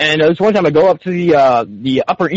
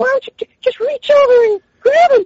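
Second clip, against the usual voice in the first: put-on very high-pitched, creepy old-man voice. Retelling a deal over a box, the speaker quotes the man in Herbert from Family Guy voice. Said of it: "doing like the Herbert from Family Guy style".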